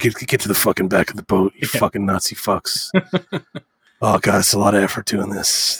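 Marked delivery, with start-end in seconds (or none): 0.0-2.9 mumbled, put-on hero voice. Mocking a game scene where the hero orders Nazis around: mumbling Indiana Jones impression. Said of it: "he's mumbling to him".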